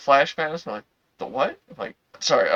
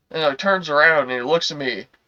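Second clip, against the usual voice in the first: normal talking voice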